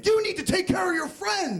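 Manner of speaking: acted-out high-pitched screaming, right in your face. Retelling a cop getting in someone's face: imitating a cop screaming. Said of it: "starts screaming".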